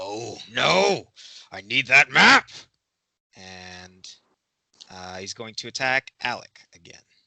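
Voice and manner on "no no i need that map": frenzied, desperate, frantic, very loud yell. Voicing a badly wounded enemy foaming at the mouth: frantic, foaming at the mouth. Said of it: "foaming at the mouth, and he says".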